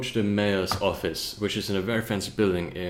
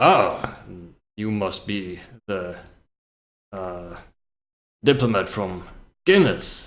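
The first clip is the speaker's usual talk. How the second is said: very deep, booming, slow dwarf voice; 5 dB louder than usual. Playing a dwarf greeting the diplomat from Guinness, in a very deep voice. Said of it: "he greets you with a very deep voice".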